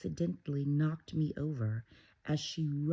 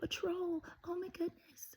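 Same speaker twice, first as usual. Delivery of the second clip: terrified, very high-pitched scared outcry; 5 dB quieter than usual. Retelling a character's frightened cry on seeing the troll: imitating a scared cry. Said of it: "Remember how scared he was".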